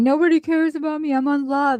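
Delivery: high, weepy, whiny, whining crying voice. Retelling what she said while she was crying and whining: imitating someone whining. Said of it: "starting her crying and her whining".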